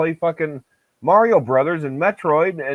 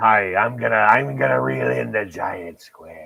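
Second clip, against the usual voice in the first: put-on low-pitched pirate voice; 6 semitones lower than usual. Joking about reeling in big sea creatures: talking like a pirate. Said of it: "I love it when I can talk like a pirate".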